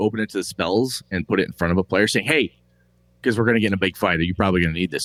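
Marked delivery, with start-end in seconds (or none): 2.3-5.0 put-on, overly polite manner with a passive-aggressive edge. Retelling handing a player the handbook: passive-aggressive politeness, retelling own words. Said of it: "very politely and passive aggressively taken".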